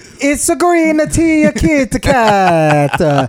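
high, slow mock Korean accent.

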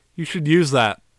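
eerie, foreboding, weird ominous delivery. Retelling a scene where a stranger greets Jotaro: imitating an ominous character. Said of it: "just very, like, ominous".

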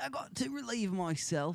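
put-on Cockney accent, pitched very high. Showing an American listener ways British people talk, in a Cockney accent.

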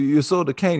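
Italian accent impression. Retelling what a man kept saying about their spending, in an italian accent impression. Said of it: "that's my dead-on Italian impersonation".

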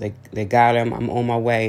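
plain

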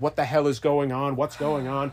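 ordinary delivery

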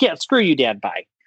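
ordinary delivery

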